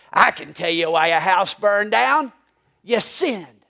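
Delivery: mock-snapping, sharp retort. Retelling a story, the speaker acts out a snap from one character to another. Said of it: "and she snaps at him".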